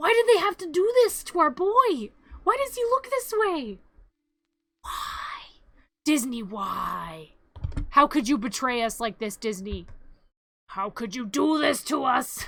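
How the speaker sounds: mock angry ranting delivery. Taking over the other speaker's rant for them, as a mock-angry rant. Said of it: "I will take your rant for you".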